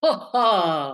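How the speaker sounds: put-on snobby, haughty laugh. Leading a resonance exercise, doing a snobby laugh. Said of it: "like very snobby".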